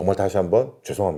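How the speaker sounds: very low, polite voice. Customer service apology to a customer, polite lowered voice. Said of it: "정중하게 목소리 낮춰서 사과해 줘야 될 거 아니야".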